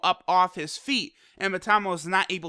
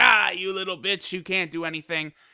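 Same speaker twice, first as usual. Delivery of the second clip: words spoken through laughter. Retelling an episode scene where Batamo mocks Gohan: imitating Batamo laughing. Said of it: "laughing, like".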